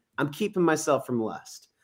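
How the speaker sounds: usual speaking voice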